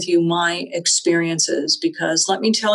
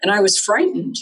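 usual speaking voice

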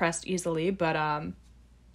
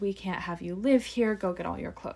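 plain

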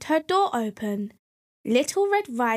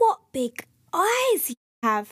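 high exclamation of surprise; 5 semitones higher than usual. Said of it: "she cried in surprise".

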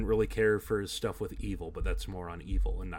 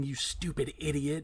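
shouting loudly; 6 semitones higher than usual. Retelling a wrestler's line in the ring: imitating Jericho yelling. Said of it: "just him yelling".

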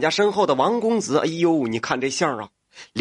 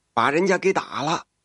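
ordinary delivery

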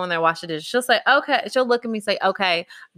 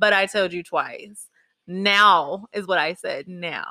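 ordinary talk

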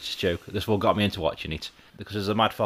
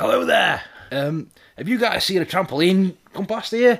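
much higher, louder angry farmer voice. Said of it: "He's like".

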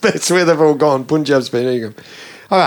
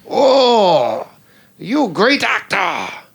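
put-on high, drawling Hungarian accent, drawn-out "oh"; 5 semitones higher than usual. Retelling a film about Tommy's friendship with Greg: Tommy Wiseau, Hungarian accent. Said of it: "Hungarian accent".

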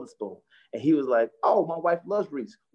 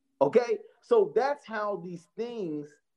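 normal talking voice

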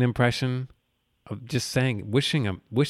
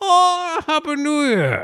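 very high, loud voice with swooping pitch; 5 dB louder than usual. Imagining the villain reading a holiday greeting aloud, Bane voice. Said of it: "he would go".

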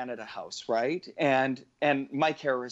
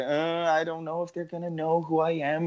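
put-on shy voice; 4 semitones higher than usual. Retelling a team walking into Canada House, the speaker imitates shy Sandra. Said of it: "Sandra was always a little bit shy".

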